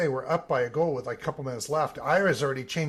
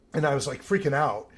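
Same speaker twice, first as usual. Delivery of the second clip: plain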